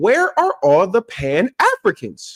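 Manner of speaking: slow, drawn-out, pointed questioning inflection. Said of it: "Y'all heard the inflection in my voice?".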